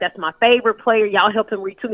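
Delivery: normal talking voice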